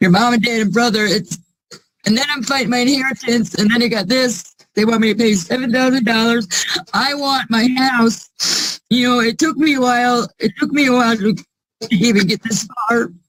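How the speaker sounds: crying through the words. Speaker explaining an inheritance fight after three family deaths, crying. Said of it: "I'm sorry, I'm crying".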